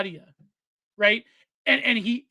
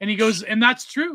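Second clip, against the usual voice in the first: ordinary talk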